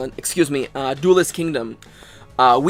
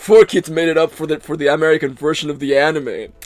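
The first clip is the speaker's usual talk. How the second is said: smug villain voice, purred out. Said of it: "why I'm making that voice, that's what he sounds like in the dub".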